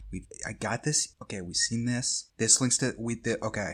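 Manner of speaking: whispered mutter under his breath. Voicing a man staring at papers on a wall: whispering to himself. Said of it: "he's kinda whispering to himself".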